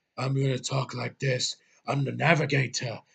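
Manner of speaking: slowed-down movie pirate impression. Mocking an actor you hate for how he talks the whole movie, in a Johnny Depp pirate impression. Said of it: "doing his best Johnny Depp impression from Pirates".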